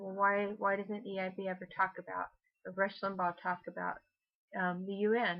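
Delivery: normal talking voice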